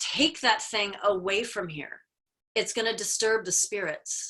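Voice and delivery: ordinary talk, nothing marked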